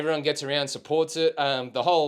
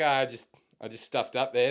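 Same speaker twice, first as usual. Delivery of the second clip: ordinary talk, nothing marked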